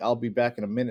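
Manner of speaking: plain reading voice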